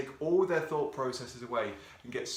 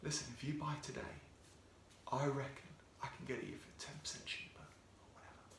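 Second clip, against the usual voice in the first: dropped, hushed, confidential near-whisper; 13 dB quieter than usual. Giving phone sales tips, showing how to make an offer, lowered voice. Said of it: "just to lower that voice a little bit".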